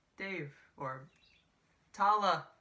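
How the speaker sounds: feeble, half-hearted, weak and limp calling out. Summing up the actors' reactions to the attacks: imitating a weak call.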